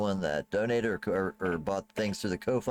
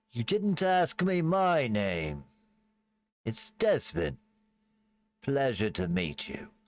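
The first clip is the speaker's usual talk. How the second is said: put-on elderly farmer voice; 4 semitones higher than usual. Narrating a farmer speaking to the listeners from behind them, Desmond's voice. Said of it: "as you hear the voice of him say".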